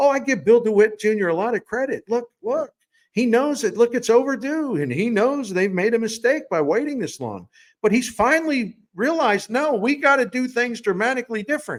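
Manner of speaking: sarcastic gushing praise. Mocking how fans might praise the owner: sarcastically imitating a fan. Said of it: "I'm being sarcastic".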